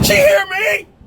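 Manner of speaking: loud shouting.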